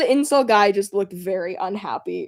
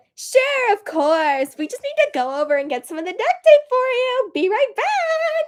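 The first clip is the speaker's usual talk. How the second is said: very high, bubbly, sweet chirp, back drawn out. Retelling what a cafe worker said about fetching duct tape: imitating a bubbly whimsical lady. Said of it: "She was so bubbly and whimsical".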